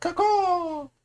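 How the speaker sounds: very high, drawn-out screaming eagle cry. Showing what an eagle sounds like, imitating a screaming eagle cry. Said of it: "That's what a screaming eagle sounds like".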